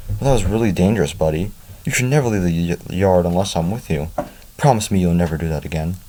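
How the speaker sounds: plain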